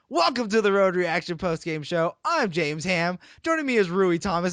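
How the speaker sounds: acted, eager, pumped-up, excited broadcaster voice. Retelling how a co-host opens the post-game show: imitating James Ham, excited. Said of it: "James will come on and he's so excited. He'll be like".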